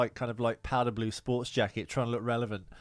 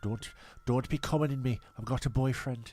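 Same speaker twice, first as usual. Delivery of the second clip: imitated Sunderland accent, quieter; 4 dB quieter than usual. Retelling what a woman said to him: imitating a Sunderland accent. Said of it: "Why do you sound like you're from Sunderland?".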